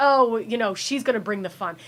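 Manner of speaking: ordinary talk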